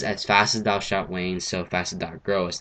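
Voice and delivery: normal talking voice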